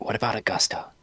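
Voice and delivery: hushed, quiet whisper. Tapping Ponky on the shoulder in character: whispering. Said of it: "And I whisper".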